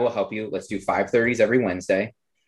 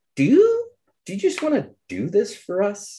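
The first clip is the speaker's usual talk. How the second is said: mock-sheepish voice, much higher; 11 semitones higher than usual. Retelling a question Zach asked, imitating Zach very sheepishly. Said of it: "Zach kind of goes very sheepishly".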